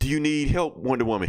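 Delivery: ordinary talk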